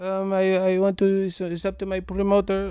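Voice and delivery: put-on Filipino accent. Imitating a boxer waking up after a knockout: imitating a filipino accent. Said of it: "you wake up with an accent".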